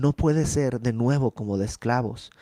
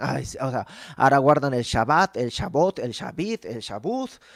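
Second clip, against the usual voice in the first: mocking, derisive, teasing tone. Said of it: "en tono burlón les dice".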